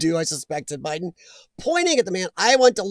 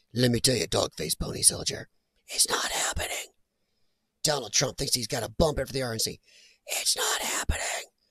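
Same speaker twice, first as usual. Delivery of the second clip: creepy-uncle style hushed whisper; 8 semitones lower, 8 dB quieter than usual. Imitating him as he tilts his head down: imitating him whispering. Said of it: "tilts his head down and then whispers".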